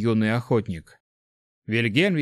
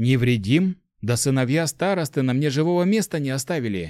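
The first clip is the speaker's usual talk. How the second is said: usual speaking voice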